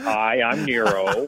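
low, bland, courteous middle-manager voice. Recalling a film villain's accent, quoting him as Nero as Milwaukee middle manager. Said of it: "kind of like it's like kind of middle management, kind of like in Milwaukee".

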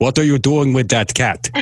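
put-on voice dropped low into vampire accent. Imagining a voice from beyond the kitchen door, the speaker uses a Count Dracula voice. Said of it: "you sounded a little bit like Count Dracula there".

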